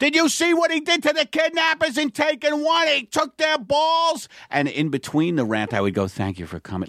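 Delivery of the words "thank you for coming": voice lowered, lower in pitch and quieter. Retelling how they broke from a rant to thank the audience: lowered voice. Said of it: "I'd lower my voice".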